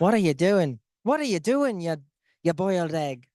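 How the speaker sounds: put-on Irish-accented voice. Imitating the assistant coach while showing an irish accent: imitating the assistant coach's irish accent. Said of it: "I'm trying to do our assistant coach".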